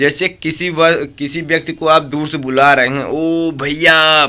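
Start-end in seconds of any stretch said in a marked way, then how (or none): 3.0-4.3 loud, projected voice with long stretched vowels. Explaining pluta vowels by calling someone from far, loud call, vowel held long. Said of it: "बहुत तेज, काफी देर तक आवाज को रोके रहते हैं।".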